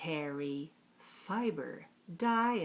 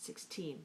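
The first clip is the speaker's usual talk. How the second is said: sixteen, second syllable stressed, sharp t; 11 dB quieter than usual. Pronunciation lesson saying a price, sixteen: stress second syllable of sixteen. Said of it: "Stress the second syllable and put a sharp T on the teen".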